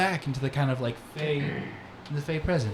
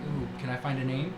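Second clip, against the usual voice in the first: usual speaking voice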